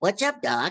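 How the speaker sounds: put-on cartoon bunny voice. Retelling a pitch to producers, doing Bugs Bunny. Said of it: "You want Bugs Bunny?".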